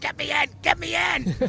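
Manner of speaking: put-on very high, shrill, rough, ragged screaming. Retelling swimming up and grabbing the side of a tour boat: retelling a scream. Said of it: "I'm like screaming".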